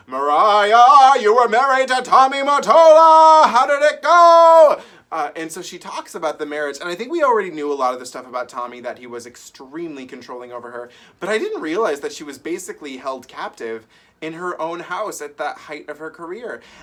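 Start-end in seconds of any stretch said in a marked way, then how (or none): 0.1-4.8 shrill, very loud, very slow talk-show boom, "go" stretched. Imitating an interviewer asking about a marriage: Kathy Griffin Oprah voice. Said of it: "start doing my Oprah voice, it's the Kathy Griffin Oprah voice".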